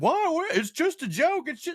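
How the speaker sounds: comic whine, pitched high.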